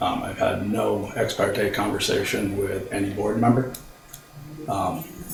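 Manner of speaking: very soft, under-the-breath voice, hard to hear.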